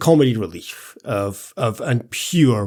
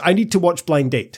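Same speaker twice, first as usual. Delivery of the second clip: put-on high-pitched, furious all-out ranting blow-up; 5 semitones higher than usual. Retelling a character raging at Eddie: imitating a furious outburst. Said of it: "she goes mental at Eddie".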